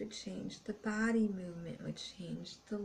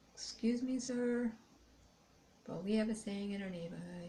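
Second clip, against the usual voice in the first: prim, mannered, overly polite and proper voice; 4 dB quieter than usual. Retelling what he said to someone, mock-polite proper voice.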